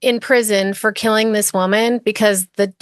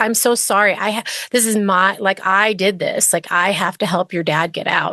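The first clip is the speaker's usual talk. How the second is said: put-on tearful crying voice. Retelling a phone call to the convicted man's daughter: imitating someone crying. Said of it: "was, like, crying, was like".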